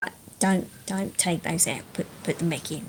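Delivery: very quiet, hushed murmur under the breath. Voicing birds so Crystal can't hear them: very quiet voice. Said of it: "they just very quietly say".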